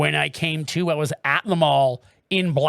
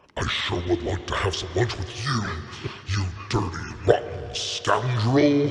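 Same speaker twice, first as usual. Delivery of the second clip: deep, electronically modulated character voice; 6 semitones lower than usual. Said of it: "our voice modulation on my Rodecaster".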